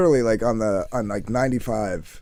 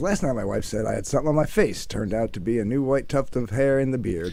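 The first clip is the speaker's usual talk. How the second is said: normal talking voice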